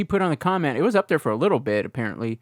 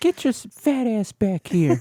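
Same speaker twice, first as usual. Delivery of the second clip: put-on high, slow wheezing voice; 8 semitones higher than usual. Joking with friends about Family Guy, imitating Herbert: wheezy Herbert voice. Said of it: "All that wheezing".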